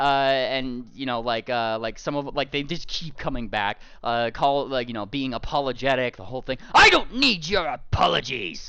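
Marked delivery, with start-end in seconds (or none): 6.7-8.7 loud, swooping, scornful, irate dragon voice. Voicing a big dragon who looks down at kobolds: angry dragon voice.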